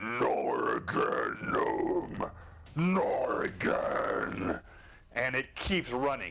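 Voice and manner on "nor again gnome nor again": very slow, rough, deep guttural giant voice. As the giant, calling out to the gnome in a guttural, deep tone. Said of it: "in this guttural, deep tone".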